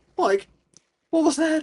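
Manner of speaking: very high-pitched cartoon-style voice. Voicing a dazed character just slapped awake: Shaggy from Scooby-Doo voice. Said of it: "he's Shaggy from Scooby-Doo".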